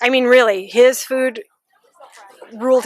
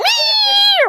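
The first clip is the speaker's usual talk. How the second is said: very high, piercing cat-like yowl. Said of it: "With this piercing voice".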